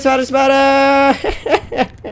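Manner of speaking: high, slow, panicked wailing yelps.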